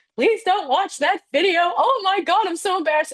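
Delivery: very high, tearful, pleading bawl. Retelling breaking down when a coworker asked if she was okay: retelling own bawling. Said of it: "I bawled. I was like".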